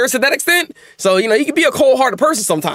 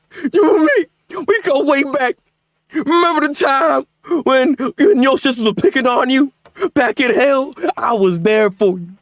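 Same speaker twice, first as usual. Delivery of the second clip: put-on sobbing, pleading voice; 3 semitones higher than usual. Acting out a tearful victim begging a friend who just attacked him, as a put-on. mock crying. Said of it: "how you're freaking crying".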